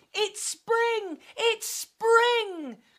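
very high, excited, drawn-out cry. Alfie wakes from his sleep and sees butterflies, crying out. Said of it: "Cried Alfie".

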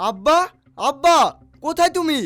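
shouting. A son calls out for his father, looking for him: shouting. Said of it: "তুমি এত চেঁচাচ্ছ কেন?".

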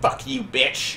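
vicious, venomous, spat-out delivery. Retelling a woman cursing at someone, mock-vicious, spitting words. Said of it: "She is spitting at you and just vicious".

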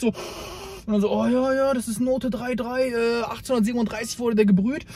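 slow, soft mock wine snob voice.

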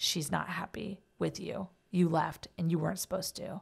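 grave serious delivery. Retelling what a friend said after going dead still: imitating a solemn warning. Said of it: "very solemnly said".

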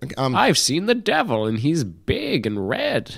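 fake elderly man voice. Asked about Deckard's voice, answering in a Deckard voice. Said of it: "What about Deckard's voice?".

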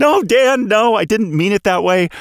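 high-pitched yelling. Recalling yelling at the monitor while watching an episode: retelling a yell. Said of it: "I found myself yelling at my monitor like".

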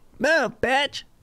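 squeaky, very high put-on teenager voice. Speaker acts out the kind of kid they most want to pin, imitating a teenage kid. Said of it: "a kid who talks like that".

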